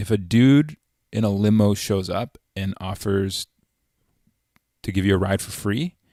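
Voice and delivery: acted totally serious, slow, dead-level deadpan. Retelling what a buddy said, looking him straight in the eye: imitating a deadpan delivery.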